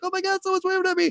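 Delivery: very high, fast, excited mock gushing.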